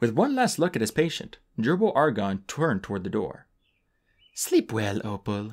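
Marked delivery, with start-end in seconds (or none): 4.4-5.5 almost fond, nearly affectionate tone. A man turns to the door after one last look at his patient, almost fondly. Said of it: "he said almost fondly".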